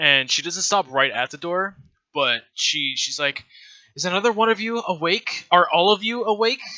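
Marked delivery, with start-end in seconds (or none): 4.0-6.6 irritated, fed-up, annoyed delivery, pitched up. Voicing a character who finds the others awake: annoyed. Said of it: "very annoyed by the fact that you guys are awake".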